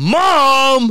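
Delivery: mock very high, shrill, stretched-out angry yell. Retelling how an angry little brother called for Mom: imitating Robbie yelling angrily. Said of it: "and he gets pissed, and he's like".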